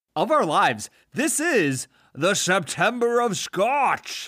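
heavy Scottish accent. Answer your co-host Brad's question about an important month in a Sean Connery accent. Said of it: "I loved the Sean Connery accent".

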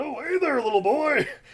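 very high, loud, squeaky, goofy puppet dog voice. Improvising a story, voicing a character greeting a little boy, sounding like Rolf. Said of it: "I don't know why I sound like Rolf".

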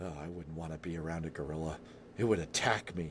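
low, quick, rattled-off mutter under the breath. Retelling what he said when the movie title came up: retelling a mutter under breath. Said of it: "under his breath".

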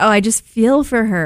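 ordinary talk

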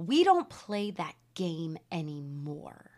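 very stern, severe, slow, no-nonsense voice. Retelling a mother's answer to her bored daughter: imitating a very stern voice. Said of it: "with a very stern voice".

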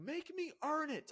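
put-on very high, drawn-out, slow scream. Speaker recounting a wrestling moment, quoting a line screamed across the ring, imitating Cody Rhodes screaming. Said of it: "he's screaming at Brock".

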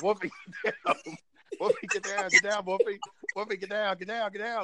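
put-on very high, shrill yelling, over and over. Retelling a show scene where a character yells at his dog: imitating someone yelling. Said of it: "he yelled at him".

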